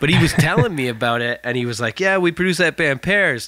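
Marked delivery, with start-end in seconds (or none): 2.0-3.5 put-on Detroit accent. Retelling what the studio owner said about the band: Mike's Detroit accent. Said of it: "Mike's Detroit accent".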